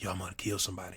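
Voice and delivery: hushed whisper under the breath, very quiet. Showing how a threat must be said at home: whispering. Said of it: "I gotta whisper".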